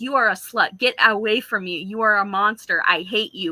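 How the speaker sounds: put-on blubbering, sobbing crying tantrum like a child. Retelling a character's sudden outburst at Christine: imitating Raul screaming and crying. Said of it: "screaming and crying like a little kid".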